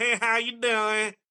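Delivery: put-on voice with an Ohio accent. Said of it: "It's like".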